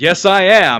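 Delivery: exaggerated, strongly all-American accent. Retelling being asked if they're a citizen, answering in the most American voice possible. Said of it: "in the most American voice I could".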